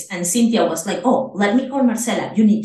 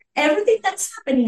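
screaming burst, pitched very high; 11 semitones higher than usual. Retelling how a friend at the embassy greeted her: imitating someone screaming. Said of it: "she starts screaming like".

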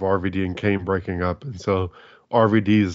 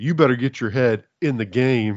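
forced, unconvincing, fake angry voice; 4 semitones higher than usual. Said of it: "so forced".

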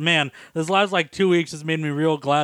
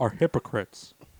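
put-on boring aging voice, lower and quieter; 5 semitones lower, 5 dB quieter than usual. Griping about hypocrites in a put-on voice: Hank Hill voice. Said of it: "That was a good Hank Hill impersonation".

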